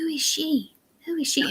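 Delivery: put-on small, sweet, high-pitched child's voice. Retelling hearing somebody outside ask about her: imitating a sweet little voice. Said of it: "it was a sweet little voice".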